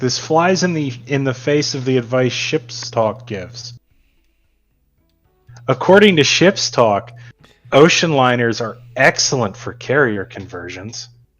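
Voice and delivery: heavy sarcastic tone, dripping with sarcasm. Replying to another speaker's point: sarcastic tone. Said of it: "The sarcasm in your voice is amazing".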